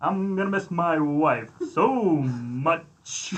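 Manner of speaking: very slow, smooth drawl, lingering on "much". Imagining the actor speaking at a funeral: Billy Dee Williams voice. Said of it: "he'd be like".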